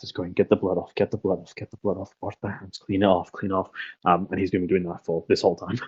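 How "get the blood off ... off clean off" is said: muttered under breath, much quieter. Narrating a man scrubbing his hands raw, muttering under his breath. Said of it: "he is just muttering under his breath".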